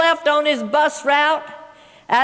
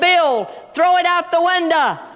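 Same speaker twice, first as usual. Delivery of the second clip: ordinary talk, nothing marked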